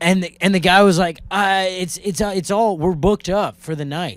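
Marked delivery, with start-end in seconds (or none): none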